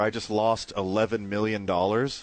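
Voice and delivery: ordinary talk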